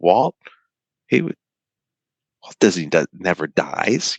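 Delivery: acted, voice catching, stumbling, halting. Retelling what an interviewee said about walt's death: imitating someone choked up. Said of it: "He was all choked up".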